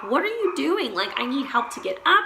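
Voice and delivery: scared, frightened full yell. Retelling the night, calling to him as he heads to the bathroom: retelling own yell. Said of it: "I'm like yelling".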